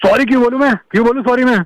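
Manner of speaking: high-pitched shouting.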